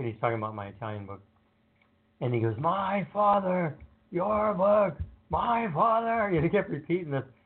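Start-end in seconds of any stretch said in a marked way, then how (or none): 2.6-6.3 angrier each time, very high, slow, drawn out. Retelling how a man kept repeating words about a book, imitating a man getting angrier. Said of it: "getting madder and madder".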